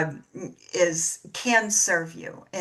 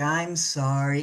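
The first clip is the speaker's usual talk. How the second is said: acted, mock-guilty tone; 3 semitones lower than usual. A mother acts out how her young son apologized when called out, imitating a guilty apology. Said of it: "he'd be like".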